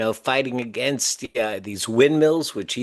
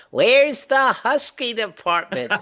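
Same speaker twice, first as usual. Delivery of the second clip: very high, shrill, high-pitched scream; 10 semitones higher than usual. Recalling his mother in J.C. Penney's: imitating her high-pitched scream. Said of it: "screaming out in her high-pitched voice".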